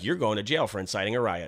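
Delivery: ordinary delivery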